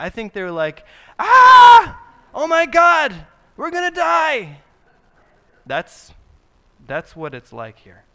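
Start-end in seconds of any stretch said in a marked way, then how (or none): 1.2-4.6 shrill, very high, very loud, panicked, terrified wail. Acting out the people trapped by the sea and army: imitating a terrified cry. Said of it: "they cried out to the Lord".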